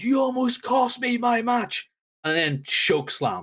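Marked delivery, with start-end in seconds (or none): 0.0-1.9 screaming yell, pitched way up high. Retelling a wrestler yelling at a kid: imitating someone shouting and screaming. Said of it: "He shouts and screams at the kid".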